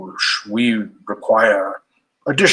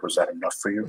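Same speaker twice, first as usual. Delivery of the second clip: muttering under breath, much quieter; 4 semitones lower, 11 dB quieter than usual. Right after addressing the great king under the mountain, a character is muttering under breath. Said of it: "I mutter".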